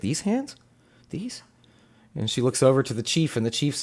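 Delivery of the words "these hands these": high, hushed half-whisper murmur. Voicing a character staring at her own hands: half-whispering to herself in character. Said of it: "She's just, like, whispering it to herself".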